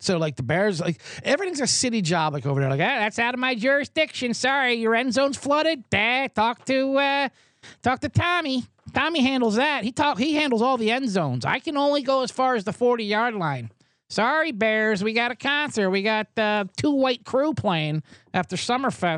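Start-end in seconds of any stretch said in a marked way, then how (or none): 2.8-19.2 put-on Chicago accent, much higher, slower. Speaker mimics a city worker in charge of Soldier Field: Chicago accent. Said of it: "brilliant Chicago accent".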